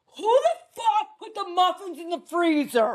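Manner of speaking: mock angry, high, furious shouting. A mom retells what she yelled at her family: retelling own angry yell. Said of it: "Me, I'm like".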